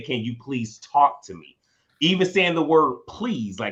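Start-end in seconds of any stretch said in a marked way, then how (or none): none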